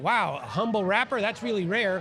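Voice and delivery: ordinary talk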